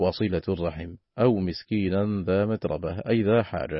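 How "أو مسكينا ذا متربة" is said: normal talking voice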